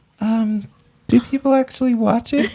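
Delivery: very high, unsure, hesitant motherly tone. Acting out a talk with a parent about the show: imitating mom's hesitant questioning. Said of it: "I think that's pretty accurate".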